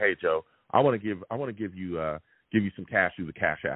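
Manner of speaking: ordinary talk, nothing marked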